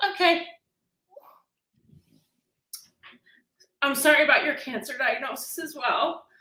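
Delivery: struggling to hold back tears, near crying. Offering sympathy about a cancer diagnosis, holding back tears. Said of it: "I'm trying not to cry".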